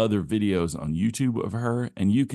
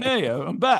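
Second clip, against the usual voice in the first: put-on Italian accent, much higher; 11 semitones higher than usual. Trying out voices for a bit, the speaker slips into an Italian accent. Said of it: "I went Italian".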